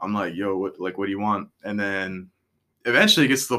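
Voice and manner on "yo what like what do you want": put-on annoyed, irritated tone. Retelling how customers get answered: imitating own annoyed tone. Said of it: "I'm getting more annoyed".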